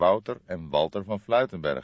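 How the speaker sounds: ordinary delivery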